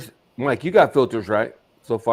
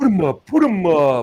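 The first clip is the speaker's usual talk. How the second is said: put-on blustering lion voice, higher and louder; 7 semitones higher than usual. Retelling a scene, quoting what the lion said, in a Cowardly Lion impression. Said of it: "that's so cowardly lion sounding".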